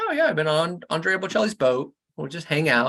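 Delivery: ordinary delivery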